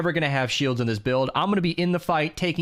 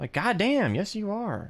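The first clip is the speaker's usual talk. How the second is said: ordinary talk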